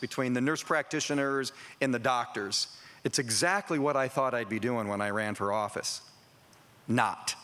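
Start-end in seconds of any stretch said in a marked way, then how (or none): none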